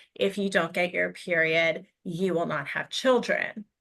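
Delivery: ordinary delivery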